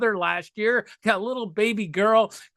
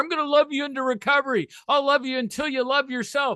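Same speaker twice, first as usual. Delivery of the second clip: mock sugary, overly loving, sweet voice; 5 semitones higher than usual. Mocking a kind of codependent recovery sponsor: imitating a Care Bear sponsor. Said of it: "the Care Bear sponsor".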